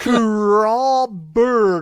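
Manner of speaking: imitated halting, first-time reader sounding out words. Retelling a movie scene where the nerd reads a sign: imitating sounding out like a beginner reader. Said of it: "read it like he's learning how to read for the first time".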